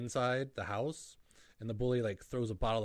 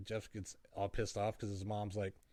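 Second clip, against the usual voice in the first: ordinary talk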